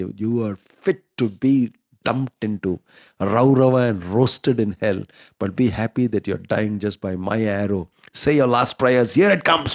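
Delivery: passionate, heated warrior voice, acted out. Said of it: "This is how they're talking".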